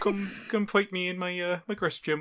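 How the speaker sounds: terrible put-on British accent, high and loud.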